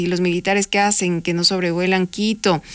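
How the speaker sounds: ordinary delivery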